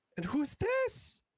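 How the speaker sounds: excited near-squeal. Narrator voicing Zaranova as she first sees Ember, almost squealing. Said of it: "she's like almost squeals and like a little out of character".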